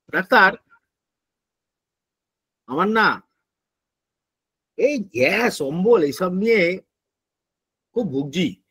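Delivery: very slow, very soft, quiet delivery. Retelling a patient's complaint to the doctor about gas and acidity, very slow, soft delivery. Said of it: "খুব আস্তে আস্তে বলছেন আমাকে".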